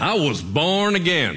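long, stretched, drawled-out Southern accent. Showing how the phrase born again has to be said, southern drawl. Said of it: "has to be done with a southern drawl".

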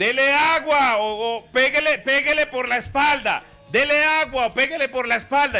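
yelling like a guard.

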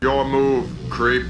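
robotic movie-cop style voice. Imagining a visitor from Ottumwa, Iowa telling someone off in RoboCop voice. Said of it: "you got that RoboCop voice".

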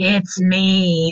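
an eerie, otherworldly, ghost-like voice. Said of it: "you hear this voice say".

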